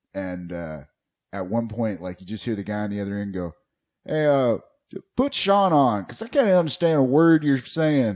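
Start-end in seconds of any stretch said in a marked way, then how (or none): 4.1-8.2 put-on very loud, high-pitched, thick Tennessee accent. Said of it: "also a very thick accent".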